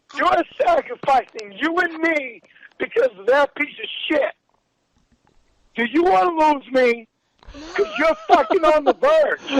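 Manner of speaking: crazy, raw, furious rage rant. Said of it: "old school crazy rage".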